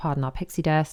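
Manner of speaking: plain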